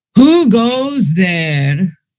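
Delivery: thundering, booming giant voice. Narrating to players, an unseen voice calls out along the paths: booming giant voice. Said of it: "you hear a booming voice coming from somewhere".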